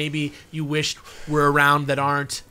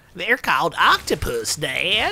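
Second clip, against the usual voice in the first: animated cartoon boy voice with swooping pitch; 2 semitones higher than usual. Quoting a cartoon line to the others, Bobby impression. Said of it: "It's impossible to not do a good Bobby".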